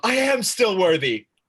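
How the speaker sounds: loud, high, overjoyed, eager, triumphant excitement. Quoting a favorite movie line as the hero grabs his hammer: excited Thor impression. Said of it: "he gets all excited like a golden retriever".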